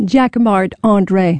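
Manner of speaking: plain American English pronunciation. Saying a French name so Americans can understand it: Americanized pronunciation. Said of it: "say it so we can understand it".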